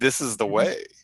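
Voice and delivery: dripping, heavy, super sarcastic delivery. Retelling a show scene, imitating Bo-Katan being sarcastic. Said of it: "and super sarcastically".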